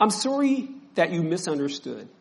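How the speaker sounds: defensive, self-justifying voice. Showing how a defensive apology sounds: defensive apology. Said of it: "apologies sound like this".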